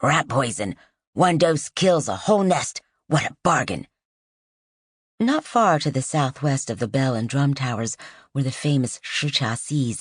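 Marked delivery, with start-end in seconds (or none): 0.0-3.9 rough, gravelly, loud calling voice. Reading a story where a second seller cries his wares: gravelly voice. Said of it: "in a gravelly voice".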